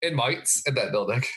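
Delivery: slipping into Australian accent. Introducing today's topic to another speaker, slipping into an Australian accent. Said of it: "I had to slip into an Australian accent".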